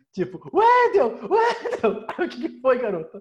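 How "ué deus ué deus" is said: very high, shrill, slow, drawn-out screaming. Retelling how Tachanha suddenly started screaming on the sofa, imitating Tachanha screaming. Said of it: "Aí do nada a Tachanha começou a gritar".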